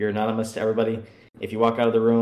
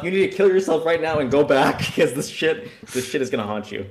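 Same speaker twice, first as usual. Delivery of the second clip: half-screamed, mild yell, pitched high; 5 semitones higher than usual. Retelling a reaction to an embarrassing court scene: imitating own past screaming. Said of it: "I was literally screaming to himself".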